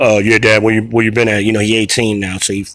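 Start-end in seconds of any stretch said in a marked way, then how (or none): 0.4-1.4 put-on deep teenage boy voice, much lower. Father acting out his eighteen-year-old son talking to him, imitating his teenage son. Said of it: "that's that's me doing my son's voice".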